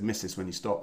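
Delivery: ordinary delivery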